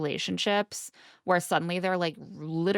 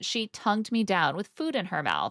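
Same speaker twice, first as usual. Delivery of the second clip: ordinary talk, nothing marked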